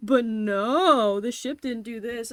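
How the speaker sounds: smug, very loud, belted delivery with stretched "no". Mocking a character who thinks he has superior intellect: smug Olimar impression. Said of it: "And then he's like".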